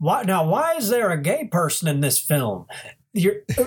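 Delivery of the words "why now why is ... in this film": high-pitched cartoon dog voice, pitch swooping around. Discussing a film not made for children, voicing a question in a Goofy voice. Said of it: "making this this voice like Goofy".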